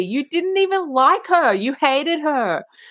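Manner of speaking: angry shouting, high pitch, drawn out. Retelling a scene where Veronica yells at the TV: imitating Veronica yelling. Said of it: "Veronica is yelling at the T V".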